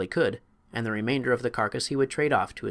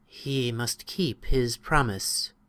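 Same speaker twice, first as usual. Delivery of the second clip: sighing voice, much slower. A creature answers visitors pleading for help, in a sighing voice. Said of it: "in a voice that sounded like a sigh".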